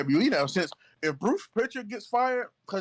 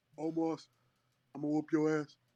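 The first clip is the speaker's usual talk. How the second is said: big, boastful, trash-talking fight promo announcer voice; 3 semitones lower, 6 dB quieter than usual. Imagining a wrestling promo by Shaq calling out Omar: Shaq impression. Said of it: "best Shaq impersonation I have ever heard".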